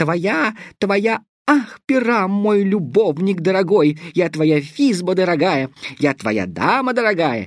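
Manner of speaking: tiny, thin, squeaky, very high voice. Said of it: "Я могу говорить чудовищно тоненьким голосом".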